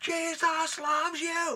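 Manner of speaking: piercing, loud, very high shout. Retelling what a guy on the street kept shouting: imitating someone yelling. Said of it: "some guy was yelling".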